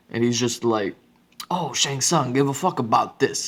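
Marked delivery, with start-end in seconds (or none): 1.5-3.5 put-on speaks with Boston accent. Speaker imitates a game character who jarringly has a Boston accent. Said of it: "hear a Boston accent".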